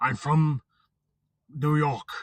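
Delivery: slow, deliberate, intense delivery. Imitating Liam Neeson asking for a favor: intense Liam Neeson impression. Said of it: "Liam Neeson's always very intense".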